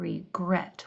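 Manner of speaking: regret with stress on the last syllable "-gret". Explaining word stress: stress on the last syllable of regret. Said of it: "When I say that, the second, the last syllable, it's accented".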